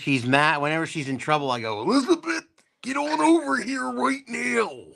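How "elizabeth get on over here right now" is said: very high-pitched, rough voice. Showing the kids' favorite bit, calling his daughter over: Macho Man impersonation. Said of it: "Macho Man impersonation".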